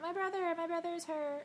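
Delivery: put-on high, rushed screaming child voice. Retelling a scene where a child comes out, imitating a screaming child. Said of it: "comes out screaming, like".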